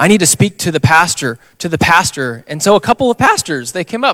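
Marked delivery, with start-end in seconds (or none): 0.0-2.4 raised, disruptive put-on voice making a scene. A man bursts in during worship asking for the pastor: imitating a raised voice. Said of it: "he starts raising his voice".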